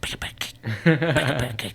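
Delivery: whispered bird voice. Retelling a video where a bird is told to whisper: imitating a bird whispering. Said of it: "she tells it to whisper".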